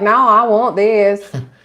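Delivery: put-on country accent. Joking about how you can't talk when you go to these places, country accent. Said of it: "be all country and be like".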